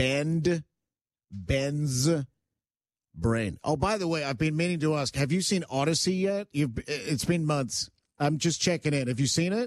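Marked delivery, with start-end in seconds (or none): 0.0-3.6 much slower, deliberate pace. A host announcing a segment name full of B's, said slowly. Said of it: "I got to say that slowly".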